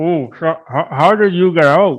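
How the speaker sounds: words pushed through a mouthful. Retelling asking your coworker a question, mimicking talking with mouth full. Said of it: "kind of with my mouth full".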